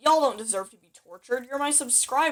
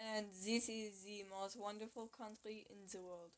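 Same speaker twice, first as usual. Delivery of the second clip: very hushed, quiet, botched fake French accent; 23 dB quieter than usual. Posing as someone from France, in a bad fake French accent. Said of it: "I'm like doing the accent so wrong".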